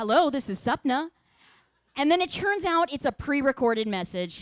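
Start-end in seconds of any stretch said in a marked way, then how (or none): 0.0-1.1 put-on formal, professional telephone voice. Home alone, answering a call that might be a job interview; put-on professional phone voice. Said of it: "So you answer in your professional voice".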